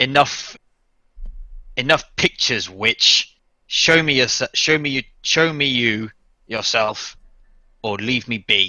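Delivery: hissed through clenched teeth. As blood pours from every crevice, Lisbeth answers, hissing through gritted teeth. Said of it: "through gritted teeth, um, just hisses".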